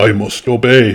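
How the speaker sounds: ordinary delivery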